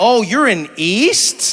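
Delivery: loud, very slow, long-drawn-out east. Imitating how some people say the word, drawn-out "east". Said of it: "people draw it out".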